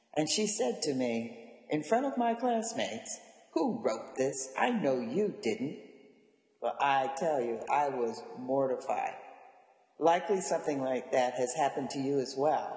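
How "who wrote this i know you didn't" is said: mock very angry, stern voice. Retelling a teacher speaking up in front of classmates, imitating an angry teacher. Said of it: "in very, very, very angry, angry tones".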